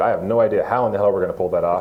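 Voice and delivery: ordinary talk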